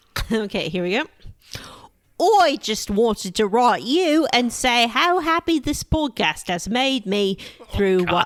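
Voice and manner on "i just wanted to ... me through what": best-effort put-on English accent. Asked to do a mockery of English people, the speaker reads a message in a mock British accent. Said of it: "I get to do my best British accent".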